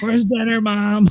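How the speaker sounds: put-on very high little-kid voice, hollering. Joking that a cat's yell sounds like a kid: imitating a kid yelling for mom. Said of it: "It sounded like a kid going, "Mom!"".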